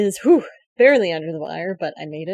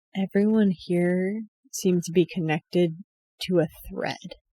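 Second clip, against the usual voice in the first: quiet undertone, voice lowered and hushed; 4 dB quieter than usual. A player character sharing what a fortune teller revealed, in a lowered voice. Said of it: "and I lower my voice for this".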